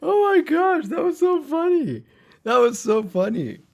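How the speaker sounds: high, loud laughing fit.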